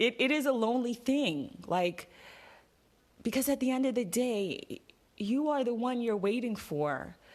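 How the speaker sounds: emotion welling up. Encouraging someone to keep going even when it feels lonely: getting emotional. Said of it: "I'm getting emotional for some reason".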